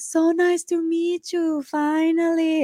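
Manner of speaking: put-on Italian accent, very high and slow. Retelling meeting someone who hugged the speaker: imitating an italian accent. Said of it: "I don't know if that's an Italian accent".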